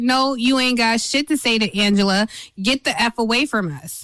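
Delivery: normal talking voice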